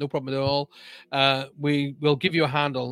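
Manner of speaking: ordinary talk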